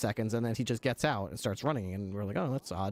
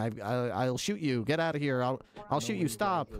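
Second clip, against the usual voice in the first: play-acted hysterical, weepy, stammering sobs, pitch climbing; 2 semitones higher than usual. Retelling a hotel manager pointing a gun: imitating hysterical crying scream. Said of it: "starts crying and hysterically screaming".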